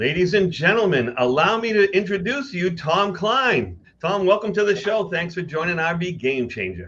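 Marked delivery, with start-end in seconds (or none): 0.0-5.1 booming voice-of-God radio announcer delivery. Host introducing the guest on the show: radio voice introduction. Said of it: "I appreciate the radio voice introduction there".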